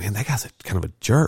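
ordinary delivery

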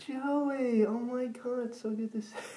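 terrible put-on voice, very high, shrill, drawn-out scream. Retelling how a man shouted a greeting: screaming in a terrible put-on voice. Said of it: "he does the worst voice ever".

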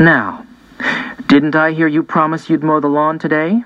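plain

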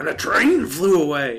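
gruff cowboy voice.

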